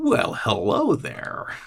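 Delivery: hushed, breathy, whispered monster voice. Voicing a towering figure that turns its head with a wide grin: grinning creature voice. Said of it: "big wide grin on its face".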